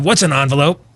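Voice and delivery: cartoon character voice. Describing what younger generations are debating: Beavis and Butthead voice. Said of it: "if I could use my Beavis and Butthead voice".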